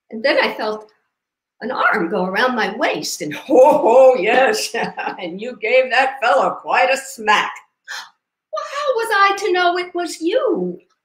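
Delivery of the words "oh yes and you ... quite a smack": put-on old retired sailor character voice, raised. In a story, a retired sailor answers his wife; retired sailor character voice. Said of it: "He's a retired sailor".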